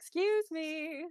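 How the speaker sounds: amplified booming voice. Calling out at a silent house, using magic: magically loud voice. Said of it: "use thaumaturgy to make my voice real loud".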